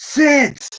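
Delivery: very high, shouted one-word yell. Acting out a movie scene where he orders her to sit: imitating a yell. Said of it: "He yells".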